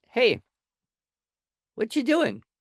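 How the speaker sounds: nicest, gentle, kindly, sing-song dad voice. Recounting walking over to her as she stares out the window, nicest dad voice. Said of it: "in my nicest dad voice".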